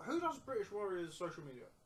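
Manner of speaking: speaking with mouth full of food. Chatting with others, the speaker asks a question while speaking with mouth full. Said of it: "I'm speaking with my mouth full".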